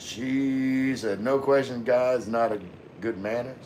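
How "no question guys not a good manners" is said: ordinary talk, nothing marked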